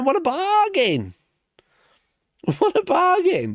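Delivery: very high, swooping, heavy sarcasm. Reading out suspiciously cheap prices to chat: sarcastic. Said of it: "I'm being very sarcastic while I'm talking about this".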